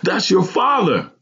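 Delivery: thrilled, very high-pitched excited yell. Narrator reads Ronald's line in a story, yelled excitedly. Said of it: "Ronald yelled excitedly".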